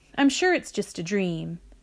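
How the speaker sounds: plain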